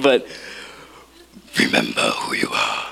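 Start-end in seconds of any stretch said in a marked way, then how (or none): 1.6-2.9 breathy, hushed whisper. Speaking to an audience, acting out a Lion King scene in a Mufasa impersonation. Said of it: "That's my best Mufasa impersonation".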